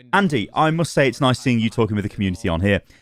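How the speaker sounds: ordinary talk, nothing marked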